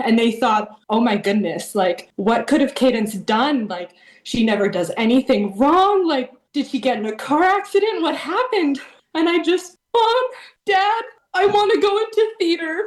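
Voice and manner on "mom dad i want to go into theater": play-acted sobbing, very high and tearful. Retelling a past conversation with their parents: retelling own sobbing. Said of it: "And I'm sobbing".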